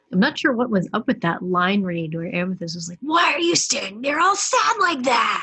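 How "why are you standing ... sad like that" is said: put-on loud, high holler. Speaker quotes a scene where Amethyst hollers at him, hollering like Amethyst. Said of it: "she like hollered it at him".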